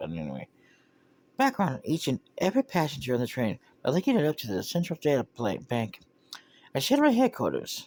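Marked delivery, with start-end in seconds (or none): 1.4-6.0 female character voice. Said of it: "women voices that I could do".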